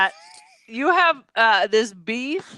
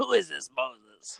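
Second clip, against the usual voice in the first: very low, hushed, quiet noir gangster-style voice; 11 semitones lower, 10 dB quieter than usual. Mocking a miscast actor playing a role in an old movie; Edward G. Robinson gangster voice. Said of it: "still talking like he's like the noir gangster".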